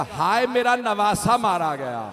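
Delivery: normal talking voice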